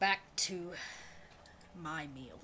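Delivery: hushed, soft, breathy, faintly sorrowful. A character sending visitors off to eat his meal alone, a little sad. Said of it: "He says almost with a little sadness".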